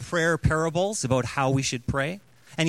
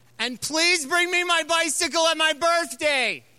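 shrill, very high-pitched, loud yell; 12 semitones higher than usual. Retelling a story of a boy's bedtime prayer: imitating a boy yelling loudly. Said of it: "he yells really loudly".

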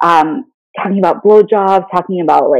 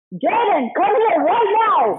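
very high, shrill, barked drill-sergeant scream; 12 semitones higher, 7 dB quieter than usual. Asked for a drill sergeant scream, the speaker calls their kid: drill sergeant scream. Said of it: "Could you give us your Let best drill this. sergeant scream?".

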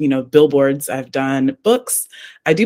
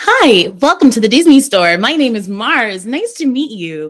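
put-on high-energy, upbeat salesperson voice; 8 semitones higher, 3 dB louder than usual. Showing a voice party trick: Disney store greeting voice. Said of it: "with something as high energy and performance as Disney".

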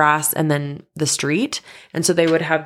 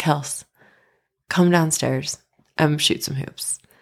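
mock sweet, exasperated voice. Retelling how her dad answered after she wrecked his car; mock sweet, exasperated voice. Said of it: "in the most sweeted, almost exasperated voice".

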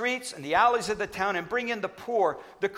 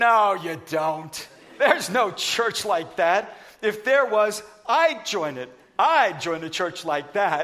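play-acted, slow, almost sneering tone; 4 dB louder than usual. Retelling the counterman's answer about the church: imitating an almost sneer. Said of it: "almost sneered as he answered".

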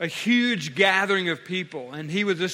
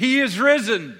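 acted-out abrupt, sudden, loud, full-throated shout; 3 semitones higher, 5 dB louder than usual. Retelling how an old priest answered a speaker: shouting. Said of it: "suddenly he just shouted".

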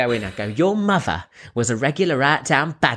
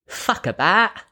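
put-on Cockney accent, pitched up; 7 semitones higher than usual. Showing the phrase he used to get into character, the speaker does a cockney accent. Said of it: "to get into a Cockney accent".

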